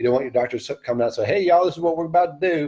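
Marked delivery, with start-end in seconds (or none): 1.3-2.7 put-on Southern accent, pitched higher. Imagining a doctor talking to a surgery patient, in a put-on Southern accent. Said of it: "that's just a Southern accent".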